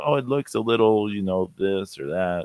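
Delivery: ordinary talk, nothing marked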